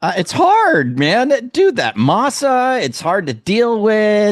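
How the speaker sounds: very high, swooping, whiny grumbling. While talking about making tamales, a speaker goes on, complaining. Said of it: "you sound like you're complaining".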